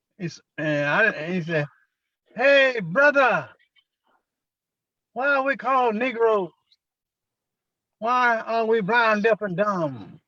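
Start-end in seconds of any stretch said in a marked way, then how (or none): 2.4-10.1 high, slow, hollered call. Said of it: "he hollered across the street at me".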